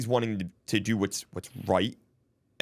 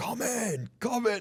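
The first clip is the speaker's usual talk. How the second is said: mock very high, slow, drawn-out hollering; 13 semitones higher than usual. Retelling how a grumpy older department head called them in: imitating someone yelling. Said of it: "he's, like, yelling".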